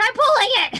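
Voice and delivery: full-on high, loud acted scream. Playing a character yelling through a closed door: screaming in character. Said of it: "And just screaming".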